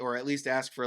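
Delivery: ordinary talk, nothing marked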